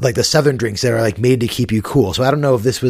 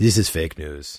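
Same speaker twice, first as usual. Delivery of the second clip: put-on very low, depressed, sad Russian accent; 7 semitones lower, 6 dB quieter than usual. Coaching a friend on how to say the line: depressed Vladimir Putin impression. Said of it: "You have to sound more like depressed".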